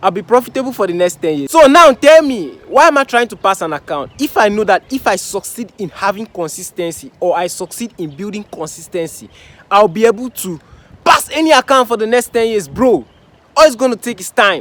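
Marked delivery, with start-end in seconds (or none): 1.5-14.6 full-voiced, loud shouting rant. Trader telling viewers about building consistency in trading, shouting. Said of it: "I'm literally shouting".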